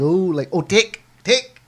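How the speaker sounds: put-on thick New Zealand or Australian accent. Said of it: "her heavy, what do you wanna call it, New Zealand or Australian accent".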